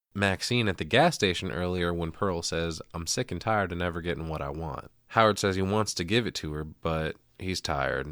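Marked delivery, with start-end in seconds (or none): none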